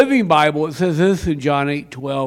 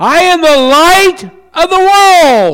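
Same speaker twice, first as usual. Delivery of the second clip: very loud, very high booming shout, word drawn out; 13 semitones higher, 10 dB louder than usual. Retelling a scene in the court of the women, the speaker is acting out a loud shout. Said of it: "he shouts out in a loud voice".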